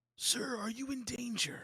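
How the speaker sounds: whispered so only one person hears. In a tabletop game, a player's character whispers so only he can hear: whispering. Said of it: "I whisper so only he can hear".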